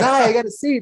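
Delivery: cheerful, happy, very high voice. Voicing a patron who sits down in the tavern: happy tavern patron voice. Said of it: "he's all happy".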